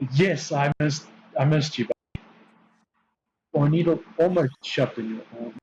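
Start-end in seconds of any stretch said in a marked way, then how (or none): 0.1-2.2 thick, heavy, unmistakable sarcasm. Answering another speaker who asks if they were missed: heavy sarcasm.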